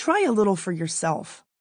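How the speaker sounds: usual speaking voice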